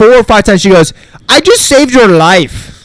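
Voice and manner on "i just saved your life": put-on Russian woman's accent, pitched up. Retelling what a woman said to him, imitating the Russian lady's accent. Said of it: "It's the Russian lady".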